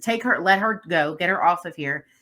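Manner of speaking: usual speaking voice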